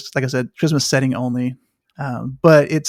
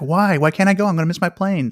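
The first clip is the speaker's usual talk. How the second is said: acted, frantic, mock-panicked voices, quieter; 3 semitones higher, 4 dB quieter than usual. Describing people stranded when the lines are turned off, imitating frantic travelers. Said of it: "the people are going nuts".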